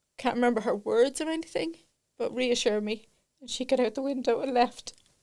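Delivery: tearful voice, close to crying. Telling a listener about a painful childhood memory: close to crying. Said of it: "I'm going to cry when I say this".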